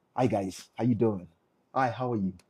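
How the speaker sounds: very low, soft, forced fake-friendly tone. A speaker shows how a businessman greets strangers in a room; fake-smile greeting. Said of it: "This is a fake smile".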